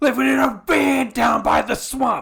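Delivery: loud, high, very slow, drawn-out yell. Imagining Chris Farley playing Shrek without an accent: Chris Farley impression. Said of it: "so I think it would just be like".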